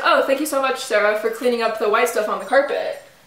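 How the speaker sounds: plain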